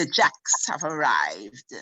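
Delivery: scornful, sarcastic, swooping, mocking sneer. Retelling the remark made when the family arrived at the gate: imitating a sarcastic, scornful remark. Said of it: "And she would say it in this way".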